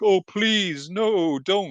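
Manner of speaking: put-on very high, very slow, drawn-out pleading robot voice. Retelling a scene where a robot is thrown out: imitating a pleading Decepticon. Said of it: "one of the Decepticons being like".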